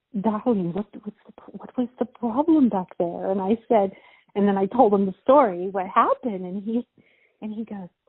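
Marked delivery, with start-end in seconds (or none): 0.2-3.3 polished, put-on English accent. Retelling what an older model said to the speaker, imitating his english accent. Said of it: "in his English accent".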